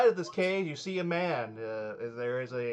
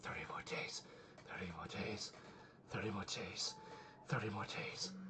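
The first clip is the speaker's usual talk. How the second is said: whispered, repetitive mutter, over and over; 7 semitones lower, 18 dB quieter than usual. Voicing a man muttering to himself over and over: whispering to himself. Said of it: "kind of whispering to himself over and over again".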